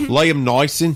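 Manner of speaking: jokey put-on Australian accent. Saying a name during a hot take, the speaker tries an Australian accent. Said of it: "that's my Australian accent right there".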